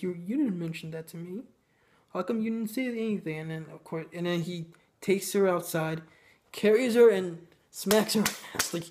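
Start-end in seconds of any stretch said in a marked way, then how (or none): none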